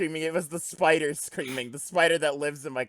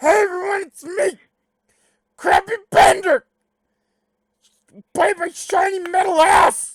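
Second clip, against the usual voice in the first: shrill, very high, very loud, booming, slow voice; 13 dB louder than usual. Showing the others a voice made for reading: Crappy Bender voice. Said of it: "These guys haven't heard Crappy Bender".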